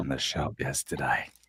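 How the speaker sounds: hushed whisper. Showing the others what he has, whispering like a drug dealer. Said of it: "Why are we whispering like a drug dealer?".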